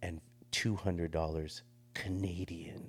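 slow, pushy, hard-edged, aggressive insistence. Retelling a demand for the fee: imitating someone speaking aggressively. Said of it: "Like, really aggressively".

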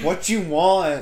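high, slow, loud, drawn-out, exasperated voice.

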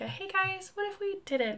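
soft, very high, mild, gentle coaxing teacher voice. Imitating a fellow teacher who never yells: imitating a calm teacher. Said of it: "he doesn't yell. He doesn't get angry".

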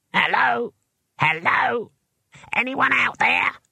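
tiny, very high squeaky voice with a creaky edge. Narrator reads a voice calling out from the picture box: small squeaky voice. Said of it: "It was a small and squeaky voice".

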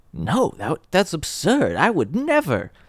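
put-on high, swooping voice of elderly English lady. Acting out what people would say, in an old british lady voice. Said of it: "old British lady right there".

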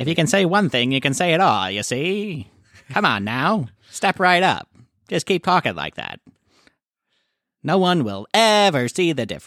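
put-on high, 1920s old-time radio announcer voice. Showing off the one voice they can copy, a 1920s radio announcer voice. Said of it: "We should talk like that".

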